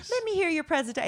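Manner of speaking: gushing over-the-top tone. Retelling what the people at the next table told a kid: imitating someone laying it on thick. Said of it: "'cause then they're laying it on thick".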